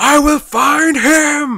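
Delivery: long, high-pitched yell. Recalling how a villain line sounded in one's head: Michael Shannon as Zod yelling. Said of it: "I could just hear Michael Shannon in my head going".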